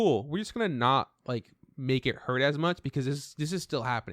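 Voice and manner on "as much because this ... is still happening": ordinary talk, nothing marked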